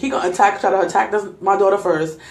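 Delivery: plain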